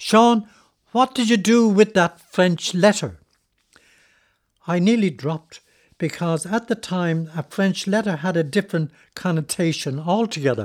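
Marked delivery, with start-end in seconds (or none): 0.0-3.2 loud, raised, pitched-up put-on call. Retelling how a woman called down to him in a crowded shop, retelling a loud call. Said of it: "said down to me in a loud voice".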